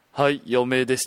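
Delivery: mock low-pitched voice. Retelling a woman's reply when the speaker checked her group's size, imitating a low voice. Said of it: "女性の人が低い声で".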